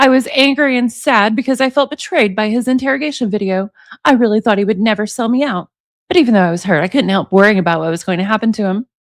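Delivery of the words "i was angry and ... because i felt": usual speaking voice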